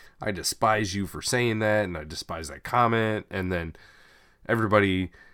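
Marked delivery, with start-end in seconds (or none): none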